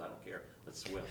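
ordinary talk

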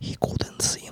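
put-on whispered, very soft, slow Austrian accent. Trying to whisper a line while doing Arnold: whispered Arnold voice. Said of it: "It's really hard to whisper in Arnold".

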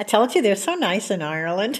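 ordinary talk, nothing marked

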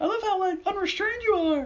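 squeaky, very high-pitched voice. Retelling a man who throws spaghetti at someone, in a real high-pitched voice. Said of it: "in, like, a real high-pitched voice".

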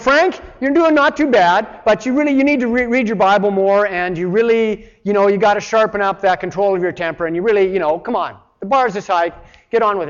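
hectoring, fed-up, angry yelling coach voice. Describing the try-harder God by voicing him as a mock angry coach. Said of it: "kind of like an angry coach".

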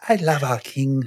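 put-on Swedish accent. Speaker repeats a soundbite they asked for, imitating the listener's accent. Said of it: "I want that soundbite with your accent saying".

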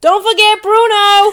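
very high, loud yell in a put-on American accent. Asked by the co-host to do it again, imitating Luke's yell in an American accent. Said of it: "Do it again".

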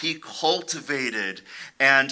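ordinary delivery

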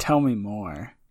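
suggestive tone. Reacting to a description of a soup buffet: suggestive tone. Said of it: "You sounded like you were feeling really kinky about soup".

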